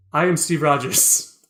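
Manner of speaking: bone-dry, toneless, flat deadpan delivery. Retelling a movie scene, quoting a character: deadpan Captain America line. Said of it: "looks at him deadpan and is like".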